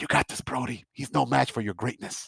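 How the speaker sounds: rushed, quick, secretive hushed whisper. In a tabletop game scene, a character speaks to brody in a quick whisper. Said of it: "he whispers like in Dwarven real quick".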